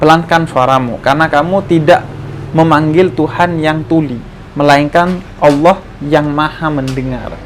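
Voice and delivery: ordinary talk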